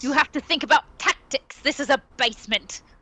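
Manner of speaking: seething, furious, voiced stage half-whisper. Voicing characters in the scene who argue over tactics, furious half-whisper. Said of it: "They're whispering this furiously".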